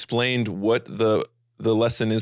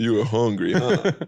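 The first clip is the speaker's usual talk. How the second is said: put-on lowered voice, much slower. Explaining what they do, the speaker demonstrates with a voice thrown a little lower. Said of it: "They'd like throw their voice a little lower".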